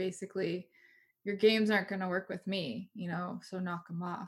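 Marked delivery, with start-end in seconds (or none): none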